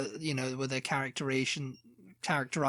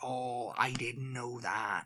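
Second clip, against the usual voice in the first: put-on, exaggerated heavy Welsh accent, quieter; 3 semitones lower, 5 dB quieter than usual. Imitating people met at work who talk at you: exaggerated Welsh accent. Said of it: "very exaggerated in the Welsh accent".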